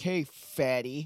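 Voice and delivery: mocking, jeering, taunting tone. Retelling how a news article made a staff member sound: imitating someone taunting. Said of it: "makes it sound like the fucking person was just like".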